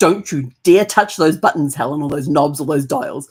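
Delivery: distant voice called from behind. Retelling how a voice from the back warned her off the buttons: imitating Brad's warning. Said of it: "this voice from the back comes".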